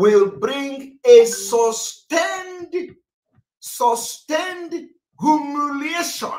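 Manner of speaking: mocking preacher style, "sustained" stressed, drawn out slow, high. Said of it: "Underline the word sustained".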